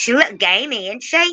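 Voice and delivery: bad, failed Australian accent, very high pitch. Joking about someone's dog being a dingo: attempted Australian accent. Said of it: "I can't do Australian accent either".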